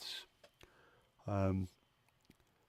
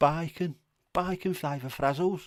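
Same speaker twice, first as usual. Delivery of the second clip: high, loud, belted Brummie accent. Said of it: "sound much better in a Brummie accent".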